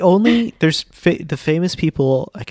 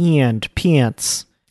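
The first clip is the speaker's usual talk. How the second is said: put-on Midwestern US accent. Showing what a midwestern accent sounds like: put-on midwestern accent. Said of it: "Midwestern is j-".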